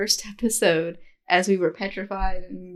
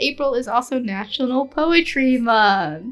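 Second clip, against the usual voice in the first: slow, heavy, dripping sarcasm; 4 semitones higher, 4 dB louder than usual. Announcing the month's events to a co-host: total sarcasm. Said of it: "She says with total sarcasm".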